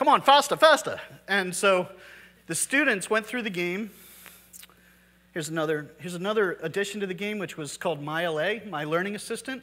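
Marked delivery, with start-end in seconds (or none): 0.0-1.0 put-on chiding German accent, higher and louder. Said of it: "spoke with this really annoying German accent".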